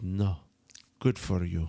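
put-on Russian accent. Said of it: "she had, like, a Russian accent".

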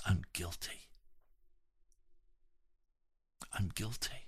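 barely audible, very quiet whisper. Telling a story of a prisoner's sudden realisation: very quiet whisper. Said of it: "he very quietly whispers, so softly".

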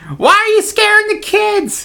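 voice pitched way up high. Voicing someone scolding about scaring the kids: Archie Bunker's wife voice. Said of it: "Archie Bunker's wife".

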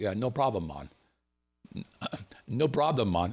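put-on Jamaican accent. Retelling a worker's reply to his question, in a Jamaican accent. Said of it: "that's my Jamaican accent".

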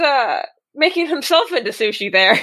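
ordinary talk

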